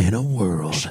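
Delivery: deep, dramatic movie-trailer narrator voice. Imitating a movie trailer's plot voiceover, in a movie-trailer voiceover voice. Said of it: "And it tells you the plot with that same voice".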